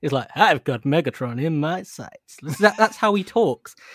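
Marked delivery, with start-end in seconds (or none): 0.4-2.4 put-on slow, cheesy, over-the-top American accent. Quoting how he talks in a game scene, in a corny american accent. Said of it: "the corniest American accent".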